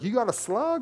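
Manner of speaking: confused, puzzled high voice.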